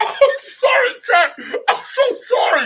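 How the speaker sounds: words breaking up, laughing, very high and slow. Apologizing to chat after a funny clip, laughing while talking. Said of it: "I'm trying to keep it together".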